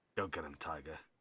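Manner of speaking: whispering. Passing a seated character and leaning in to his ear: whispering in someone's ear. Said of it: "just whisper in his ear".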